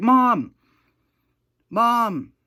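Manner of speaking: very high, loud yell. Telling a story about a night at home, you act out someone calling for their mother, yelling. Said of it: "screaming and crying".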